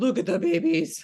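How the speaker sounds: high, loud, squealing, doting voice.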